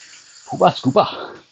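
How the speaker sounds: Newcastle Geordie-accented delivery. Teaching listeners a quick trick for doing the accent: Newcastle accent. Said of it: "you can speak with a Newcastle accent".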